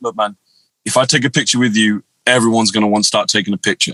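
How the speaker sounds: low, deep, very calm voice. Retelling asking Shaq for a photo, the speaker gives a calm Shaq impression. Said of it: "just very calmly, very calmly".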